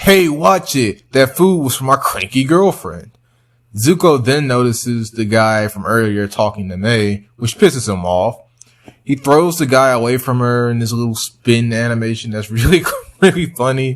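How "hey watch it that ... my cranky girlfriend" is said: put-on high yelling. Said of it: "has the audacity to yell at him and be like".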